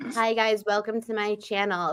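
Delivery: dead-level flat monotone, no tune or inflection. Imitating a girl whose voice is so monotone, flat monotone voice. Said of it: "her voice is so monotone. She's like".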